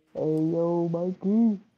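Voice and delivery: deepened voice. Voicing a forty-five-year-old male character, trying to sound like a man; deepened voice. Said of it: "I'll have to deepen my voice".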